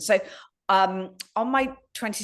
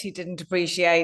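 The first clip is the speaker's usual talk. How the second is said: ordinary talk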